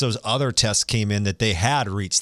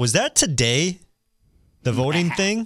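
high, sarcastic, feigned cluelessness; 7 semitones higher than usual. Pretending not to know about voting day, sarcastic mock ignorance. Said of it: "there's sarcasm".

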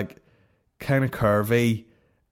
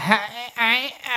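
mock croaky girl voice, higher; 12 semitones higher than usual. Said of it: "doing that croaky".

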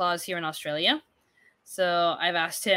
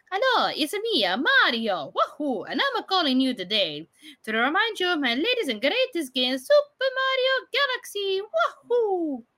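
very high pitch swooping around; 11 semitones higher than usual. Recalling a GameStop phone message, doing a Mario voice. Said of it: "with Mario's voice".

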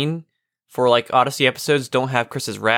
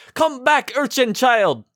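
very high-pitched yelled villain call; 11 semitones higher than usual. Retelling a funny scene where Leonid runs after a child: imitating Leonid yelling. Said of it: "and he yells".

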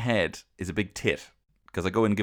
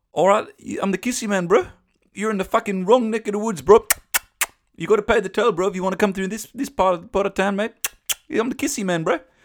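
blended South African and New Zealand accent, loud, high; 11 semitones higher, 5 dB louder than usual. A speaker performs a self-described kissy man, in a South African-New Zealand accent. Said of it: "somewhere in between a kind of uh, South African and New Zealand".

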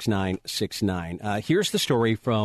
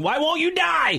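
put-on very high, frantic, panicked shriek. Retelling how a man screamed while crushing a spider: imitating a man screaming. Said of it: "he was screaming".

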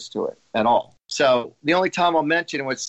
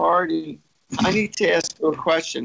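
mock weepy, crying, tearful voice; 3 semitones higher than usual. Retelling how people came to ask a question: imitating someone crying. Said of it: "they come to me literally crying".

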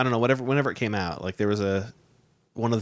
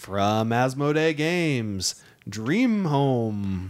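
amateur awards announcer voice, "home" drawn out; 3 semitones higher than usual. Reading out card game award nominees, in an attempted announcer voice. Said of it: "I don't have a good announcer voice".

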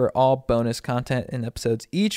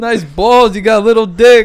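very loud, high-pitched put-on New Jersey accent; 9 semitones higher, 14 dB louder than usual. Retelling what a girl from New Jersey said: imitating a New Jersey girl. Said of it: "Why are you talking like this?".

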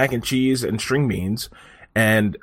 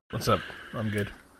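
hushed, very quiet, listless, flat, unenthused monotone; 3 semitones lower, 12 dB quieter than usual. Answering the host's how-are-you at the start of the show: flat, unenthused greeting. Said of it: "You sound great".

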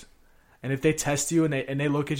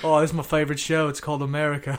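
put-on, comedic Australian accent; 4 dB louder than usual. Joking that people in Australia watch America like a show: put-on Australian accent. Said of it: "Australia's doing that shit, too".

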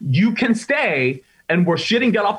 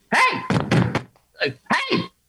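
stern reproving tone. Retelling how Judge Judy yelled at a woman on TV: imitating Judge Judy yelling.

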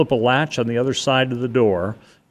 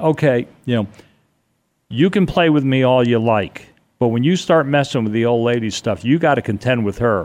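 ordinary talk, nothing marked

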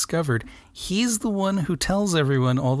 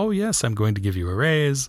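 coaxing, smooth, buttering-up sweet-talking flattering tone. Retelling a movie scene where he tries to sweet talk her: imitating sweet talking. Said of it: "he tries to sweet talk her".

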